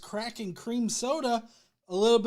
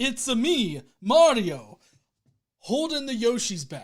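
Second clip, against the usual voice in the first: loud, belted, very slow, drawn-out game-hero voice; 4 dB louder than usual. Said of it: "my best Chris Pratt impersonation of Mario".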